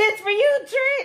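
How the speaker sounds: high, loud mock scream.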